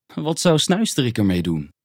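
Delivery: ordinary delivery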